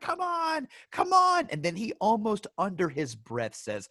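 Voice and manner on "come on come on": slow, drawn-out yell, pitched way up. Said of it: "yelling as he's holding the gun".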